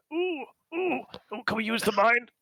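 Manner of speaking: dramatic, high-pitched stage voice. Imitating the character Orden's acting voice at a bedroom moment: imitating Orden's acting voice. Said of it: "in his best, uh, Orden acting voice".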